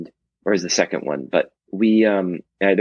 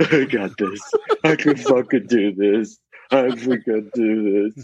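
put-on, slow, tearful words pushed out through crying; 4 semitones higher than usual. Recalling a run around the neighborhood, retelling own crying. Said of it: "like crying".

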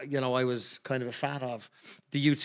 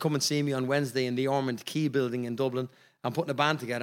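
ordinary talk, nothing marked

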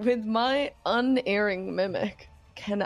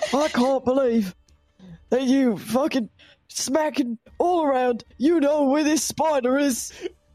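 put-on acted grandpa-like voice; 4 semitones higher, 5 dB louder than usual. In a role-play scene, discreetly mimicking Bash, in a grandpa-like voice. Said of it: "He sounds like a grandpa".

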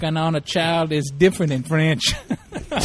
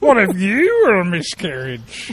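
put-on voice, slow and sing-song. Mocking another speaker's question by copying their voice: imitating another speaker's voice. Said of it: "don't do my voice".

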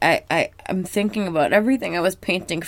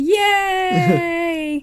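put-on group of kids cheering, higher; 11 semitones higher, 4 dB louder than usual. Retelling a cartoon scene with a kids' gang vocals: imitating kids' gang vocals. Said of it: "a kid's gang vocals".

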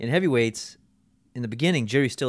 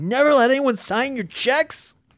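put-on, very high, shrill, all-out screaming; 11 semitones higher, 5 dB louder than usual. Retelling a scene about a bankruptcy, imitating someone screaming. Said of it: "And he's just screaming".

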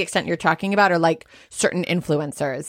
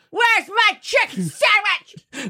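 mock very high, drawn-out angry screaming yell; 14 semitones higher than usual. Imitating Amy Carlson screaming at her cult followers: angry Amy Carlson impression, yelled. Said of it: "this is my impression of Amy Carlson when she's hungry".

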